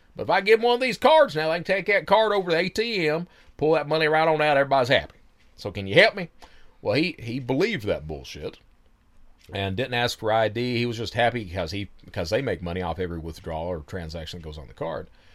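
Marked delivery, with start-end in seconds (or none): 0.2-6.3 put-on high, loud, thick Southern accent. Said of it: "this thick Southern accent of".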